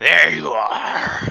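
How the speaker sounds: loud, rough, creaky growl. A game master voices a figure who pauses fifty feet away, growled words. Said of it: "Kind of growls out in".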